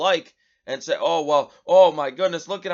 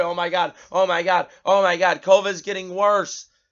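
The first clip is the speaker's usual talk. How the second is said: mock, put-on scared panic; 2 semitones higher than usual. Mocking how scared people will react, imitating scared panic. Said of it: "are going to be scared".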